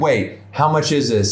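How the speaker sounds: ordinary talk, nothing marked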